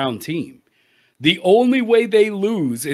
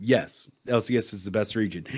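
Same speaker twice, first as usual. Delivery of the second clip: mock straight-faced, emotionless, dead flat, very low and soft; 8 semitones lower, 9 dB quieter than usual. Retelling Faker's press conference reply: imitating Faker's deadpan answer. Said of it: "just straight, no emotion".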